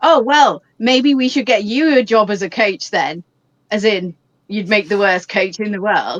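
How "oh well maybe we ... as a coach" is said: dry, mocking, sarcastic tone. Recounting the reply to a man who shouted at them while running, retelling a sarcastic reply. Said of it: "I said to him sarcastically".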